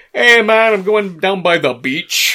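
very loud, high put-on Jamaican accent. Mocking how a performer sounds by quoting him: Jamaican accent.

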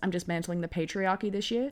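ordinary delivery

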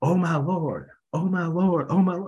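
put-on high-pitched, sudden screaming, over and over. Retelling a woman screaming in the office lobby: imitating someone screaming. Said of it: "she starts screaming".

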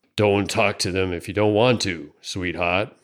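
rasped, mumbled words. Narrating a story, voicing a bearded man speaking to Cassie; raspy mumble. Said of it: "[name] shuffled back into view, a yellow-toothed grin opening a ragged gap in his beard. / he mumbled. / rasped a voice out of the darkness. / [name] lurched out of the swing and would have done a fac".

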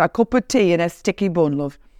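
homely English accent, put on. Showing the accents used when telling a story: English accent. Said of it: "I do an English accent".

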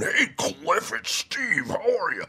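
distinctive high-pitched caller voice. Imitating a voice talent's phone greeting: imitating Steve Sarner's voice. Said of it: "And that's the way he talks".

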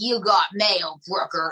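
put-on old-school Bronx accent. Retelling what the mail room woman said: imitating old school Bronx accent. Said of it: "old school Bronx and cracked the bubble gum".

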